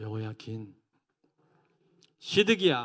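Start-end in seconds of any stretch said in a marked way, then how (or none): 0.0-0.7 weak, gentle, softly said "여호야긴". Listing five king names for the class to repeat: softly said 여호야긴. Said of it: "약하게 발음한 사람은 삼 개월짜리 왕들입니다".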